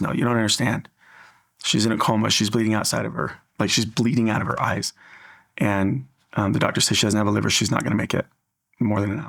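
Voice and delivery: ordinary talk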